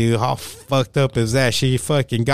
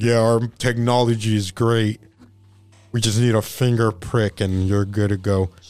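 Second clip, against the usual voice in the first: deliberately faked deep, low voice; 3 semitones lower than usual. Retelling how she pitched her company's technology, imitating a put-on deep voice. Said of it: "She'd talk with the deep voice on purpose".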